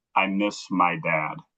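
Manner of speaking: very slow, hushed half-whisper, close and quiet. Retelling what a little kid half-whispered into the ear: imitating a half-whisper. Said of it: "whispered into my ear".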